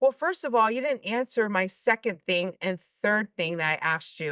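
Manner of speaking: usual speaking voice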